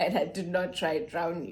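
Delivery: ordinary talk, nothing marked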